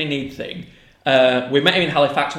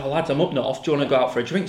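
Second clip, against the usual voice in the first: usual speaking voice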